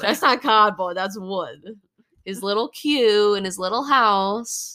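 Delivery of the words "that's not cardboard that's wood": put-on thick New York accent, faster. Quoting a man about a piece displayed in his house: thick New York accent. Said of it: "Thickest New York accents".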